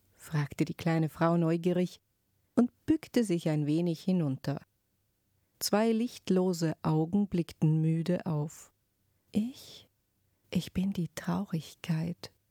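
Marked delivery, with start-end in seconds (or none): 9.3-12.3 whispered, barely audible, faint and hushed. A voice answers the little woman's question in a very soft whisper. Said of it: "flüsterte eine Stimme so leise".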